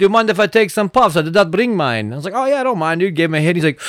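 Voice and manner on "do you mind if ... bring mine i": put-on Russian accent. Retelling how a stranger at a concert asked for puffs: Russian accent. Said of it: "It's like Russian accent".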